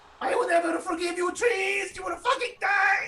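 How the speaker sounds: screaming while crying. Voicing their character's turn at the top of the round, crying and screaming. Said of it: "I'm crying and screaming at the same time".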